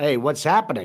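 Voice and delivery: plain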